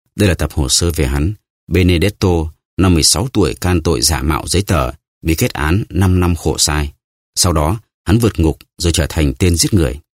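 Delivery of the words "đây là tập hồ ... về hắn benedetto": ordinary delivery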